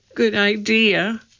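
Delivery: tiny little voice. In the dark, Annie answers Jack's suggestion in a small voice. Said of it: "said Annie in a small voice".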